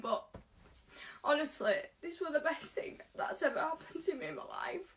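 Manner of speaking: crying through the words. Speaking about having had a baby and doing her makeup, crying. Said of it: "now I'm crying".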